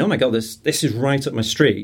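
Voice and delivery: ordinary talk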